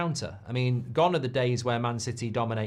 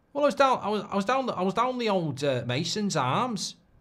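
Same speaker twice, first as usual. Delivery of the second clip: fake Liverpool Scouse accent, pitched up; 8 semitones higher than usual. Joking about a big night down the pub: put-on Scouse accent. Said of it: "That's Scouse".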